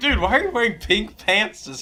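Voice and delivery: teasing, ribbing, mocking jab. Retelling teasing a friend about pink pants: imitating own past mocking. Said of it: "I made fun of you all day".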